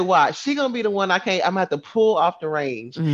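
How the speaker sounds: ordinary talk, nothing marked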